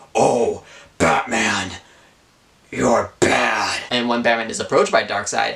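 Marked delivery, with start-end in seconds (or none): 0.1-3.8 very slow, intimidating delivery. Retelling what Darkseid says to Batman: imitating Darkseid intimidating. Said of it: "said some intimidating stuff like".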